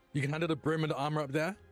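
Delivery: calling out loudly. Playing a character calling over to another character: yelling over to someone. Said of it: "I will yell over to Lorelei".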